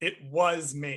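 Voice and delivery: heavy stress landing squarely on "was". Quoting someone's line with its exact intonation, stress on was. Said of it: "Emphasis on the was".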